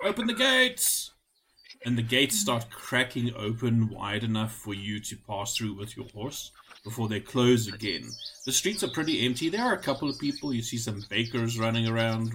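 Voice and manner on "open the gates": very high shout from afar. Narrating a scene as a guard shouts to open the gates: distant shout. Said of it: "you hear a shout".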